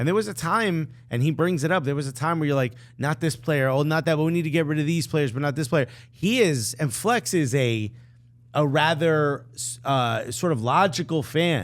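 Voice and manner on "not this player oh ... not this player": plain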